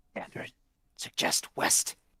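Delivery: loud stage whisper called out. A character applying salve calls across to Dandarin: whisper-yelling. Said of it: "he's going to whisper yell over to Dandarin".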